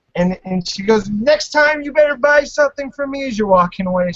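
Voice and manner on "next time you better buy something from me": high-pitched, loud yell. Retelling how the seller yelled as the customer walked away: retelling the seller's yell. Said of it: "she's yelling at you".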